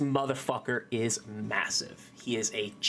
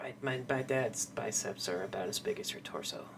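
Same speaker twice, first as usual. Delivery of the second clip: quiet, soft-spoken delivery; 6 dB quieter than usual. Voicing a character who answers about her dad: speaking quietly. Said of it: "She says quietly".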